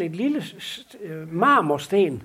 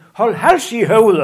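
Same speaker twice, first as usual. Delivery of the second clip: very loud, booming shout; 10 dB louder than usual. Retelling a story, the speaker quotes a man calling out into the church, retelling a shout. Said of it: "så råber han ud i kirken".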